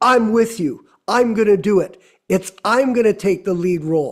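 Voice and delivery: ordinary talk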